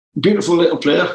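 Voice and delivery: put-on Geordie accent. Retelling Sir Bobby's answer on the phone about a player, as Bobby Robson in a Geordie accent. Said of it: "that's my Geordie accent".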